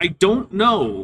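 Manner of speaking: put-on mechanical, robotic little boy voice. A drone answers a player asking if it can come along, mechanical boy voice. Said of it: "The a mechanical boy voice says".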